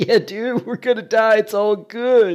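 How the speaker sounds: drugged-out stoned voice, pitched way up, loud. Describing the group's voices, imitating the drugged-out pothead named Crank: pothead Crank voice. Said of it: "pothead, like drugged out druggie named Crank".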